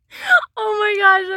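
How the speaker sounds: high, loud burst of laughter.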